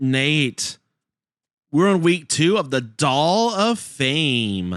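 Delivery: morning radio DJ patter, drawn-out "Fame". Host introducing the guest on a horror movie podcast, a bit too nine a.m. DJ. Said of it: "a little too, you know, nine a.m. D J voice".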